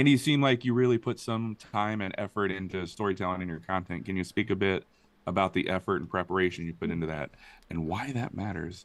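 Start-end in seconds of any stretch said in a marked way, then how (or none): none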